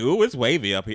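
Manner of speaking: plain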